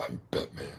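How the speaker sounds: whispered, breathy put-on voice. Saying it again after being told to say it right: put-on Batman voice. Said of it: "You gotta say it right".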